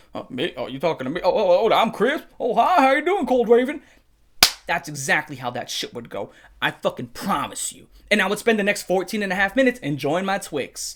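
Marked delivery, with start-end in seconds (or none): 0.1-3.8 gullible, oblivious, easily fooled tone. Acting out how gullible Takedown Man would answer: Takedown Man voice, acting gullible. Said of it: "It would go just like this".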